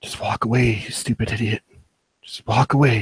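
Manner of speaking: hushed, under-breath whisper to oneself. A player character watches from a window, speaking to himself, whispered under breath. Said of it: "Under my breath, I whisper".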